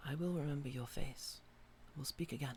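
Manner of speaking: quiet inner voice. Voicing an unseen voice heard in the player's mind as they fade. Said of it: "And then you hear in your mind".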